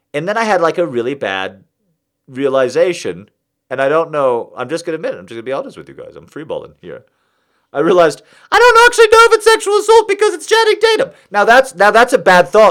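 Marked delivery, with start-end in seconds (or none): 8.5-11.1 very high, squeaky little voice. Admitting a bad thought to podcast listeners, the speaker says it in a high squeaky voice. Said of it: "I said it in a high squeaky voice".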